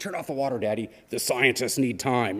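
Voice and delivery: dramatic, gripping voice. A father retells his kid scolding him about the water, quoting in dramatic, gripping voice. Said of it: "in this like sort of dramatic, gripping voice".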